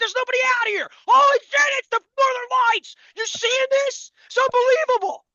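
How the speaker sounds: acted, very high, loud, thrilled, excited yelling. Retelling seeing the northern lights with no one around, re-enacting an excited yell. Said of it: "I'm yelling to no one".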